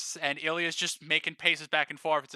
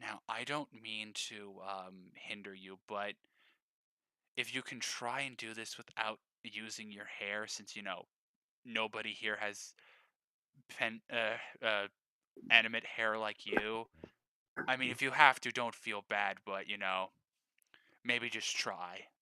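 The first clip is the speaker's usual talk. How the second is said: very quiet, hushed, low private half-whisper; 6 semitones lower, 9 dB quieter than usual. Before sending the players off, a character walks over and half-whispers to Millie. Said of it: "just whispers".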